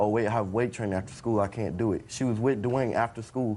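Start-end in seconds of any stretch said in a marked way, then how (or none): none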